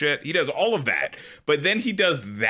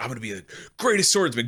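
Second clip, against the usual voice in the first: put-on little kid voice; 2 semitones lower than usual. Retelling how the little kid Isidro talks to Guts: imitating Isidro. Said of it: "the little kid that kinda pals around with him, is very much the same mentality where he's like".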